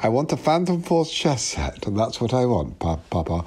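put-on, polished upper-class English accent. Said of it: "he perfected this sort of like Reese Mogg-type accent. He started talking like this".

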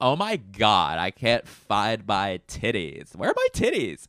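put-on swooping California valley girl accent. Running through accents one after another, now a California accent. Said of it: "another California?".

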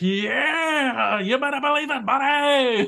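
put-on, very high, drawn-out, top-of-the-lungs scream. Retelling a scene where the hero answers a taunt from a foe; Luffy screaming. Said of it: "Luffy just screams at the top of his lungs".

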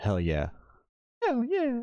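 very high, sing-song nu-metal frontman voice. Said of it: "My [name] impression".

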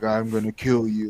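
put-on whisper. Retelling a game skin's line whispered in the ear: Rambo whisper. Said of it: "Rambo was just running around whispering in my ear".

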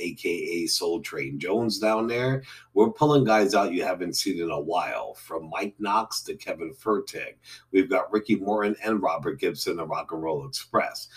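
ordinary talk, nothing marked

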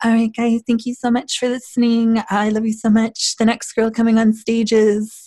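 put-on very high, sweet, babyish voice. Acting out a performer announcing the next girl on stage, imitating a sweet little baby voice. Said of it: "she had this sweet little baby voice".

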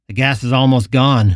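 plain

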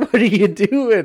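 acted, very high-pitched, words through laughter. Retelling another hunter's reaction to a shot in the ass: imitating someone laughing while talking. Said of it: "he started laughing out loud".

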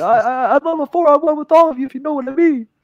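put-on frightened stuttering. Retelling how a man reacted with everyone up in his face: imitating Jerry stuttering, scared. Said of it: "he was like stuttering and like kind of scared".

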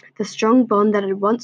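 plain reading voice

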